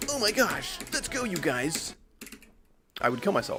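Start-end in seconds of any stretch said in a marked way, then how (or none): 0.1-1.9 huge sing-song delivery, way up high. Contrasting their own voice, a speaker demos a super exaggerated YouTuber voice. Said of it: "super exaggerated YouTuber voice".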